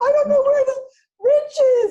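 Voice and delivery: put-on very high, very loud fake blubbering. Imagining being found on the couch by the boyfriend: mock crying. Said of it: "I'm on the couch crying".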